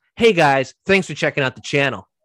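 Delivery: fake cheerful, phony intro voice. Mocking a typical channel intro: disingenuous YouTuber greeting. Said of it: "the whole disingenuous".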